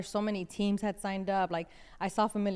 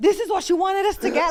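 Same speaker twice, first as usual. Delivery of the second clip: put-on shocked voice, higher and louder; 11 semitones higher, 11 dB louder than usual. Retelling the dad's reaction on tasting the drink: imitating a shocked dad. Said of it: "they were so shocked".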